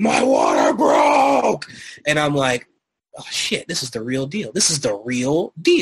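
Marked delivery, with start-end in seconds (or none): 0.0-1.7 rough, swooping, eruptive demonic voice. Retelling the moment the water broke, eruptive demonic voice. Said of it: "in like the most like eruptively demonic voice".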